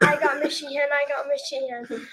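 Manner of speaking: normal talking voice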